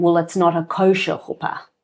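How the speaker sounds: put-on South African accent. Retelling what a man said during a disagreement, in a put-on South African accent. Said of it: "I'm putting on a South African accent".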